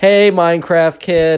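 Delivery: play-acted loud, high calling-out voice. Retelling a girl calling out to a kid: imitating a loud call. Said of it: "very loudly".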